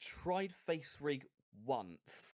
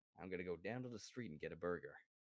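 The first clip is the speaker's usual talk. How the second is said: fast, low, fake American accent. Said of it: "See, it doesn't work".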